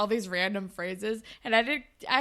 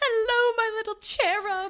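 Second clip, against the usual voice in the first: put-on very high, loud voice in a British accent; 12 semitones higher, 5 dB louder than usual. Retelling a scene where Jay greets the triplets: imitating Jay's British accent. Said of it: "he comes out with a, with a British accent".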